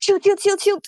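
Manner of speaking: high, quick muttering to oneself. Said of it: "she's going to quickly mutter".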